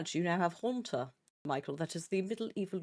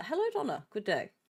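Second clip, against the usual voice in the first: slightly posh accent creeping in, light tone; 4 semitones higher than usual. Greeting someone while waiting on a game mod, in a slightly posher accent. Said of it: "slowly slid into slightly posher".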